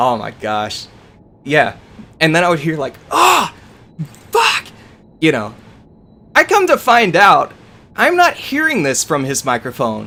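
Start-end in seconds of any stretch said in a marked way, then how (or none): 3.1-4.7 mock furious high-pitched shout. Retelling what an angry opponent shouted after a kill: imitating someone yelling. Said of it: "this dude is yelling so loud".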